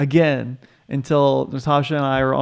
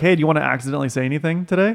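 ordinary talk

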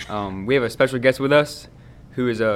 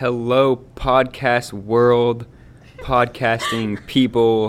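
mechanical, robotlike delivery; 4 dB louder than usual. Opening a school podcast episode, the host does imitating Orlandi, robot-like. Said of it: "You sound like a robot".

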